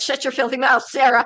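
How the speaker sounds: playful fake shouting. Telling Sarah to shut her mouth: mock yelling. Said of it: "keep yelling".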